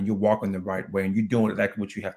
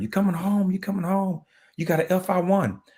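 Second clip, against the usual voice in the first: shrill hollering at very high pitch; 10 semitones higher than usual. Retelling calling home while family yelled on the phone, imitating family yelling. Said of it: "They was yelling".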